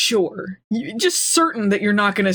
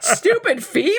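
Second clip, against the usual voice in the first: mock disgust, higher pitch; 10 semitones higher than usual. Retelling a scene, imitating a disgusted avatar. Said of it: "the avatar's, like, disgusted".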